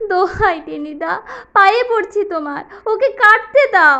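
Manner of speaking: put-on tearful voice. A narrator acts out his past self begging another character, retelling a tearful plea. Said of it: "আমি কাঁদো কাঁদো হয়ে বললুম".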